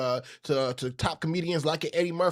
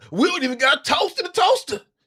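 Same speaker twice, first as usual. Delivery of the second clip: put-on streetwise New York voice, higher and louder; 11 semitones higher, 6 dB louder than usual. Retelling what a brother said about fame: Charlie Murphy impression. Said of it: "Charlie Murphy impression".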